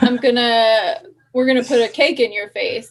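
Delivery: put-on, mock man voice. Quoting a man's words in a comedy story, using a put-on man voice. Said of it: "That's the man voice".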